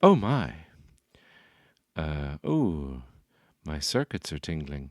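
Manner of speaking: droid-like, faltering, hesitant robot voice. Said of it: "something C three P O would say".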